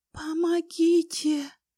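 very high, pained moan. An unseen person in the corridor calls for help, quiet moan. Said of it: "тихо простонал кто-то".

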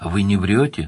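plain

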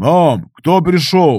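calling out loudly. Mikhail shouts from inside the hut to his mother. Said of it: "крикнул из хижины Михаил".

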